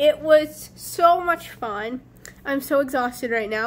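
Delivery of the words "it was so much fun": so much fun stretched slow and high. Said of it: "but it was so much fun".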